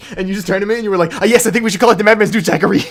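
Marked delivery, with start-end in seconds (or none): 1.2-2.8 put-on fed-up, annoyed voice, raised. Speaker tells Justin how he answered during commentary, imitating annoyed Justin. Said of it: "you were so annoyed with me".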